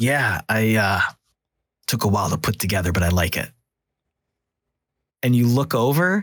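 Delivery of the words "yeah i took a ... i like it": low, growly voice. Voicing a character who answers the players: Mister Mercury low growly voice. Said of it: "you hear kind of a low, growly voice".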